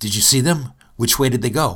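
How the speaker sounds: eager, excited, fast and rushed, with rising pitch. Retelling a joke told to baristas at coffee trailers: imitating own excited voice. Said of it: "say in an excited voice".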